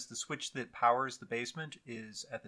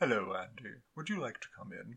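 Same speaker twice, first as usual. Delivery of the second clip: put-on gentle, soft, kindly, grandfatherly old man voice; 4 dB quieter than usual. Retelling red eyes appearing in the dark to greet Andy, in a nice old man voice. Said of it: "In such a nice old man tone".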